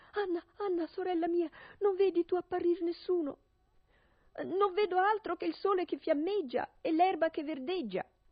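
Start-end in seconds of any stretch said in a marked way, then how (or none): 0.1-3.4 smothered, choked cry from a tight throat. A wife calls to her sister while her husband threatens to come up: stifled cry. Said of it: "si metteva a gridare con voce soffocata".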